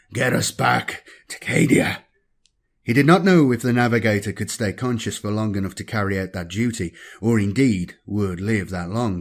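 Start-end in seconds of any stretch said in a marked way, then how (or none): 0.2-2.1 faint, weak, rasping, gravelly voice, drawn out. Reading a story, a wounded librarian orders the navigator: faint, gravelly voice. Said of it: "ordered in a faint, gravelly voice".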